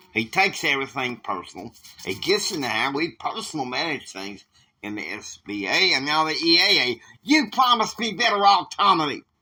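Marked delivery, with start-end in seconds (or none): 6.6-9.2 high, loud, heated, disrespectful tone. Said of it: "you watch your tone with me".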